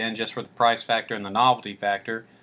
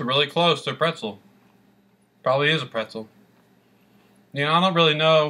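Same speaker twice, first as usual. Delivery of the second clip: speaking through food while chewing; 4 semitones higher than usual. Tasting a snack and describing it, talking with mouth full. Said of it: "Talking with my mouth full".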